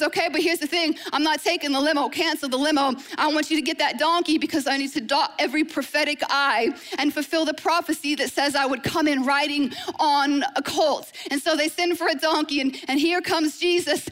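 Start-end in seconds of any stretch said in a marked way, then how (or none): none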